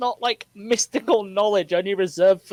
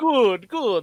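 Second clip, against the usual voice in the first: bad put-on vampire voice. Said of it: "he sounds like a shit Dracula now".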